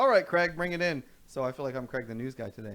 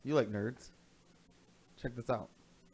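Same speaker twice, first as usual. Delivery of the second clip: usual speaking voice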